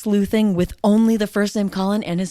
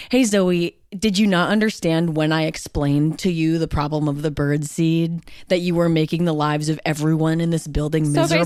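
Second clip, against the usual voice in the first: ordinary delivery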